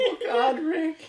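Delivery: very high, loud cry with the voice cracking. Teasing another speaker whose voice cracked, the speaker does a Morty voice. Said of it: "Quit your voice cracking, Morty".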